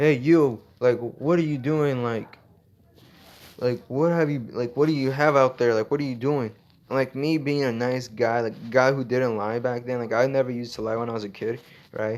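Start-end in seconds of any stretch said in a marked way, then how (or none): 0.0-6.5 play-acted scolding teacher's yell. Retelling how the teacher called out across the room: imitating the teacher yelling. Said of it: "she starts yelling".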